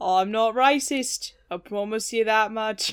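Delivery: impression with a Scottish-sounding accent. Asked why they're being John F. Kennedy, answering in a John F. Kennedy impression. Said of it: "Why is your John F. Kennedy Scottish?".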